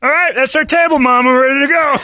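silly put-on voice, high and loud.

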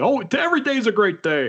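put-on jolly voice, catchphrase-style delivery. Quoting a colleague's catchphrase in his voice: Ben Solak voice. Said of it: "That's a great Solak voice".

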